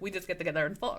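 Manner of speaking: put-on Russian accent. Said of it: "I also just love your Russian accent today".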